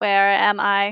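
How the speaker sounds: robotic voice. Voicing a robot that flickers to life: robot voice. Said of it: "the robot flickers to life and goes".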